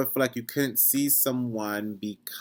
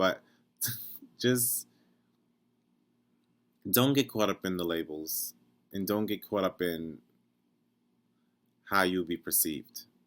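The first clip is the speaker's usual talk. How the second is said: words spoken through stifled, suppressed giggles; 2 semitones lower than usual. Answering a question and giving advice, while holding back a laugh. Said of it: "I'm trying not to laugh".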